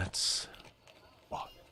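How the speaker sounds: hushed, quiet, urgent whisper. Voicing Diavora speaking quietly to a player: whispering as Diavora. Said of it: "Diavora whispers to you and just goes".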